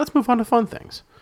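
mock high echo.

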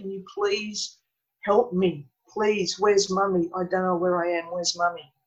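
put-on crying, frightened child voice. Retelling a dream in which a frightened, crying child begs for help: imitating a crying, frightened child.

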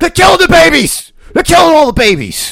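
shrill, booming, high yelling at full blast. Doing an impression on a podcast after announcing it: Alex Jones impression. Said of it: "I'm about to do an Alex Jones impression".

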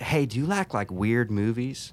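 put-on southern accent, southern Missouri. Retelling what a hairdresser said, imitating a southern Missouri accent. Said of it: "she had kinda like a southern accent".

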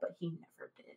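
hushed, breathy whisper, voice sinking away. Telling a story about a man on stilts: quiet voice. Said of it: "your voice got quiet there".

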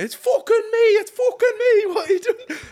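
put-on yelled, very high, very loud Scottish accent. Retelling rolling around by the road, the speaker quotes Callum in his Scottish accent. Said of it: "in his Scottish accent".

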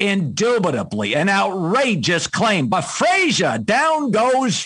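slow, drawn-out, loud, swooping, booming sportscaster delivery. Showing how you impersonated the guys you used to take notes on, do a Howard Cosell impression. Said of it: "Howard Cosell".

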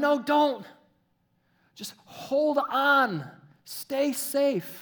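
high, loud yelling. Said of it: "everybody's yelling at him".

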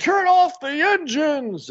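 very high, slow, drawn-out shrieking scream. Retelling a movie scene where a bad guy screams orders: imitating Montez screaming. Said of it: "he's screaming at 'em".

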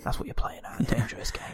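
put-on whispered british gangster voice. Retelling a film scene in a dark car: imitating Ray Winstone whispering. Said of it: "they sort of whisper".

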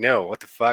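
put-on disgusted reaction. Retelling a fan asking for an autograph, imitating Ryan Reynolds, disgusted. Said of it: "and then Ryan Reynolds, like".

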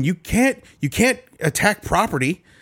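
acted, high-pitched screaming outburst. Speaker tells his dad about a man wheeled out in handcuffs, retelling his screaming. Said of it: "he was screaming".

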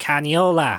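heavy Jersey accent, laid on. Co-host suggests saying a name differently, then says it in a thick Jersey accent. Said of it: "but like with that thick Jersey accent".

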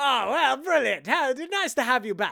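put-on British officer voice. Retelling a film scene where a British RAF officer phones: imitating a British RAF officer. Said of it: "biggest dick of a British R A F officer".

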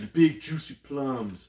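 put-on Southern accent. Retelling a movie scene where Will Ferrell ad-libs: imitating Will Ferrell's southern accent. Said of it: "he's trying to do, like, a southern accent".

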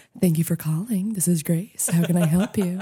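polished on-air radio announcer voice. Showing how she sounds answering calls at work: radio voice. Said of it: "I have radio voice".

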